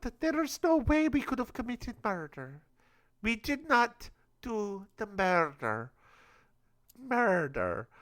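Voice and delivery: high, put-on Swedish accent. Retelling what suspects said in a put-on voice: Swedish accent. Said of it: "What accent is this murder?".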